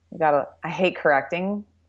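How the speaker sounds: usual speaking voice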